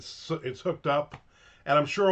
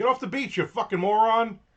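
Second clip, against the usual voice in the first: loud yelling, high-pitched; 8 semitones higher, 3 dB louder than usual. Recalling watching wave footage with his wife, retelling yelling at people on the beach. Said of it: "And I'm yelling at people".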